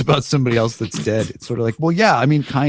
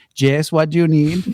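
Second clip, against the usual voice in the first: teasing, mocking send-up voice with raised pitch; 5 semitones higher than usual. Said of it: "I'm making fun of Hilaria Baldwin".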